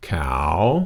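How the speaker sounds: cow with a slight dip, then a big rise. Teaching a rising tone, cow with slight dip then big rise. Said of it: "you're going to go down a little bit and you're going to come up quite a bit more".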